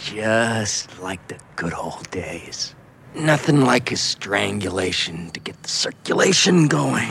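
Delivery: very low, very deep evil horror-film doll voice. Recapping a scene, the speaker quotes the killer doll in a Brad Dourif Chucky voice. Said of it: "In that very Brad Dourif Chucky voice".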